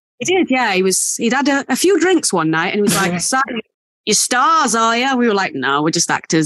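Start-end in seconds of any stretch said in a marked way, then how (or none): 3.2-5.2 bad put-on Australian accent, much higher. Retelling what a man who'd had a few drinks asked them, bad Australian accent. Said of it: "Sorry for the awful Australian accent".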